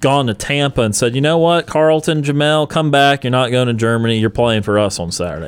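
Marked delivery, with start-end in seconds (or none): none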